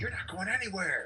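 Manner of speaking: very high-pitched, shouted in-character yell. Acting out a character stopping a fleeing enemy: yelling in character. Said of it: "and I just yell".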